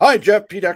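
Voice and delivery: booming, shrill, very high, loud, cheerful and upbeat. Demonstrating how to open a conversation with a stranger in sales, cheerful voice. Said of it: "Cheerful voice".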